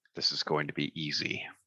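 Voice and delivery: muttered under the breath. Game narrator voicing a Goliath who looks over at the players, very quiet, under his breath. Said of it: "you can hear him very quiet, kind of under his breath".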